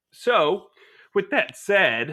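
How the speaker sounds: breaking voice, cracking upward. Speaker wrapping up his decision to extend a player, voice cracking. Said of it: "as my voice cracked weirdly".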